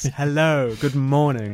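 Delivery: cheesy voice with a big smile. Recalling media training, the speaker demonstrates a greeting: speaking with a massive smile. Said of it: "speaking with a massive smile on my face".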